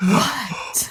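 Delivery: gasp of shock.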